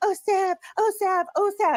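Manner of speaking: high, slow, fawning, adoring sucking-up voice. Mocking another speaker for how they acted toward Sav: mocking imitation of a fawning fan. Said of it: "licking Savage's old gray fucking flappy Arby's meat curtain pussy every time she".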